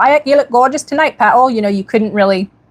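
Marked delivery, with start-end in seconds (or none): 0.0-1.5 northern English Geordie accent, pitched up. Recalling living in Geordie land, the speaker imitates the local Geordie accent. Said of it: "I lived in what was called Geordie land. So it was like".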